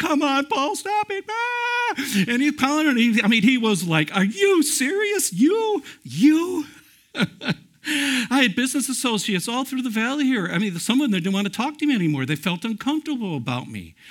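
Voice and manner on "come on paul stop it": mock helpless, hard laughing, much higher in pitch. Telling how a man fell off a bench laughing, quoting him: retelling hard laughter. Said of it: "He's laughing".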